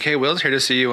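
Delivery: plain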